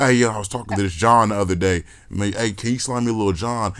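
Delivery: ordinary delivery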